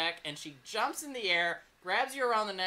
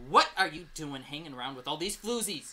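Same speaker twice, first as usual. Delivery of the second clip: put-on scolding woman's voice, lower; 3 semitones lower, 3 dB louder than usual. Voicing Samantha, who finds the player's character with other girls, scolding. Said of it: "She's like".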